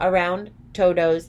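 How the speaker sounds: ordinary delivery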